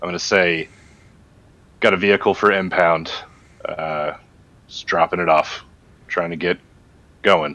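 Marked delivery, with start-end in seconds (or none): 1.8-7.5 solemn, earnest, no-nonsense, dead-serious delivery. Addressing special ops guys, in the most serious voice possible. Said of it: "with the most serious voice that I could muster".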